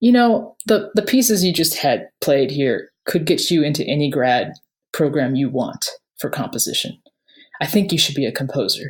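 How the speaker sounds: serious voice. Speaker quotes a man who got serious after hearing him play, retelling a serious remark. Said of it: "he got serious and he goes".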